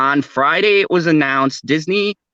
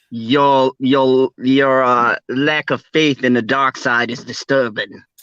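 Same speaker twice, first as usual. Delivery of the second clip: terrible villain voice, stammering and fumbling the start; 2 semitones lower than usual. Quoting a Star Wars line as the Emperor: terrible Emperor impression. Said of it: "that was a terrible, like, impression of the Emperor".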